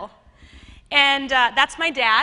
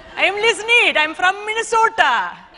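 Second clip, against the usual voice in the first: Indian English accent, slow and high-pitched; 7 semitones higher, 4 dB louder than usual. Showing the audience a party trick of changing voices: switching to an indian accent. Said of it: "We're going to talk like this now".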